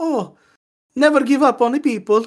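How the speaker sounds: very high-pitched, loud cartoon voice. Mocking an audiobook narrator's delivery in a serious scene, in a Luigi voice. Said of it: "like the Luigi voice was like".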